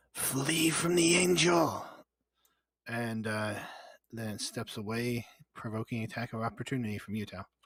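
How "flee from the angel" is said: high, shouting monster yell. Voicing a creature that yells to flee from the angel: creature yelling out. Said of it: "it yells out".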